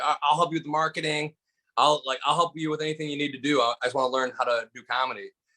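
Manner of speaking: ordinary delivery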